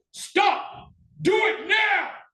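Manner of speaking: half-strength shout, very high, loud, booming, slow, drawn-out. Explaining safety at a shooting range, showing a command: loud shout at half strength. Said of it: "I might shout loudly".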